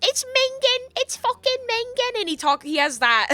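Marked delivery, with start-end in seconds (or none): 0.0-2.2 put-on very high kid voice, pushed way up. Recalling a game character who talks like this: imitating Kuno from Disco Elysium. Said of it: "He talks like this".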